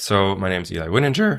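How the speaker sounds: voice breaks and cracks partway through. A guest introduces himself to the host's audience, voice cracking. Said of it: "wow, my voice cracked".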